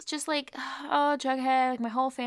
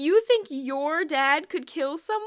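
put-on hysterical laughing, higher pitch; 4 semitones higher than usual. Recapping an episode and quoting Alice, imitating Alice laughing hysterically.

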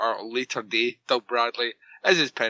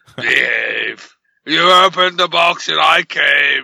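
loud, rasping, creaky, badly done villain voice; 4 semitones higher, 11 dB louder than usual. Told they won't do the Hellraiser series, a speaker answers with a terrible Pinhead impression. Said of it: "that's a terrible Pinhead impression".

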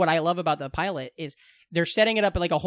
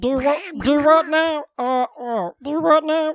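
high-pitched, loud, very slow crawling voice; 8 semitones higher, 5 dB louder than usual. Trying a Donald Duck impression that comes out as Meatwad voice. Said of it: "that's Meatwad".

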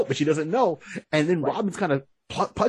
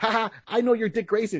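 put-on gloating voice, higher; 6 semitones higher than usual. Retelling a Batman comic scene, imitating Barbara Gordon gloating. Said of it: "she's like gloating".

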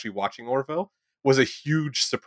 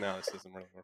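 much softer, flat, deflated delivery. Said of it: "and I'm like".

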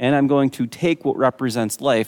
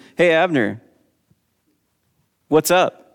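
acted, mock-sarcastic teasing tone; 4 semitones higher, 4 dB louder than usual. Retelling how one man called out to the captain of the guard, retelling a sarcastic tease. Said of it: "a little bit tongue-in-cheek, a little bit sarcastic".

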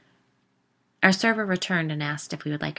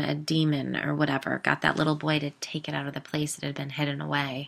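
usual speaking voice

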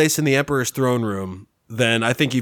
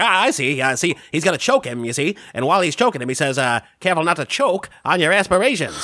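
vaudevillian comic voice, much higher; 4 semitones higher than usual. Pitching a joke movie line to fellow writers, in a vaudevillian guy voice. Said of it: "it's some vaudevillian guy. He's like".

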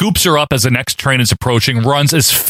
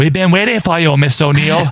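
horrible, bad put-on Japanese accent; 3 semitones higher than usual. Recapping a movie scene where Foot Clan members approach April; fake Japanese accent. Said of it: "Fake Japanese accent".

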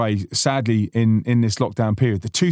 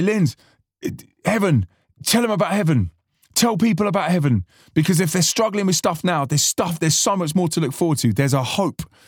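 thick put-on Spanish accent over American, high-pitched; 6 semitones higher than usual. Quoting what a man would say to him, imitating thick Spanish accent. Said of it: "he had this thick Spanish accent with an American accent".

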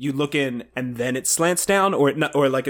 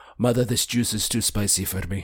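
put-on little European boy voice, lower pitched; 4 semitones lower than usual. Picturing themself as a child being Werner Herzog, the speaker does a child Werner Herzog voice. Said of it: "me as a child being Werner Herzog".

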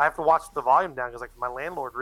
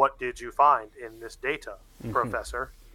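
put-on robot voice. Recapping a scene, imitating Eight Man: robotic Eight Man voice. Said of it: "he sounds very robotic here".

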